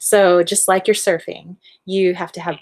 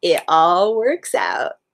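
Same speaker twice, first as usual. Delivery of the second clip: put-on slow, laid-back, stoned surfer drawl. Voicing a grinning higher self who calms you down: stoned surfer voice. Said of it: "Why is my higher self stoned surfer?".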